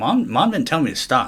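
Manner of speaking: loud high hollering. Retelling what was yelled at the coach: imitating own yelling. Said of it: "I'm yelling at him".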